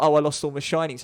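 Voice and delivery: ordinary delivery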